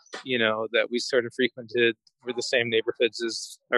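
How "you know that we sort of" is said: ordinary delivery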